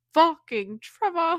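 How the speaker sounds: loud, high-pitched yelling in a bad British accent. Describing reading a book, voicing how a character says a name: bad British accent as Hardin. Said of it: "I can't do a British accent".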